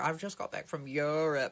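put-on crossover-style New Zealand English accent. Retelling a woman they met today, the speaker imitates her new zealand crossover accent. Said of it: "New Zealand English, crossover accent".

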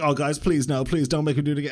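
put-on babyish, whiny, pleading voice. Retelling a streamer pleading with viewers, imitating a whiny baby voice. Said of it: "he was doing this, like, whiny baby voice".

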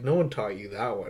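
ordinary delivery

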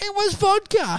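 mock shrieking scream. Retelling how a friend shrieked and laughed: imitating Brett Blake shrieking. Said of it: "Brett Blake shrieking, laughing like some sort of hyena and screaming".

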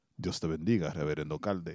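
dropped bass, very low, deep and soft. Saying how he will greet the reverend, dropped deep bass voice. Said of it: "I'm gonna drop the bass in my voice".

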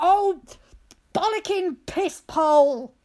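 very loud, drawn-out, furious angry swearing burst. Speaker demonstrates a made-up swear blurted out in anger, mock-angry sweary outburst. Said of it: "you're so angry you need to say about 7 swear words".

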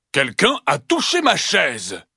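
big rumbling growling bear voice. Narrator reading the three bears story, voicing the father bear: Papa Ours growling big voice. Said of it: "Papa Ours gronde encore de sa grosse voix".

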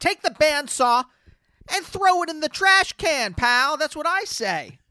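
loud scolding telling-off. Telling off an imagined neighbor with a sander: mock loud telling-off. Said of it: "you're saying it loud enough for them to hear it".

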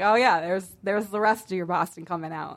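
plain

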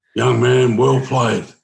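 big, rough, rasping gravelly voice. Retelling what Sammy said after a first hundred, imitating Sammy's big gravelly voice. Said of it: "He had that big gravelly voice".

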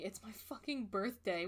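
small crying wail, like screaming. Retelling a tweet about Scorpio season, imitating someone screaming. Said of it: "hear someone screaming".

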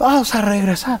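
play-acted shrill, very high yelling. Recalling a flight where a pilot read instructions, retelling a shout. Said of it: "gritaba así".

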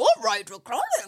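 animated dog character voice. Retelling a movie scene, quoting Scooby: Scooby-Doo voice. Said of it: "And then Scoob goes".

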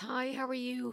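mock super cheerful, bright, high-pitched tone. Retelling answering a phone call at work: imitating own happy greeting. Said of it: "I answered the phone with the happiest".

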